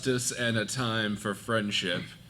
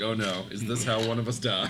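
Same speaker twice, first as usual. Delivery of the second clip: ordinary delivery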